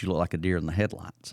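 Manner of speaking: usual speaking voice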